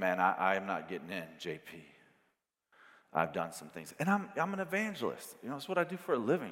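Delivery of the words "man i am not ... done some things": very low, grave, dead serious, acted out. Retelling what a man told him as it got real serious, imitating that serious tone. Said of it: "it gets real serious".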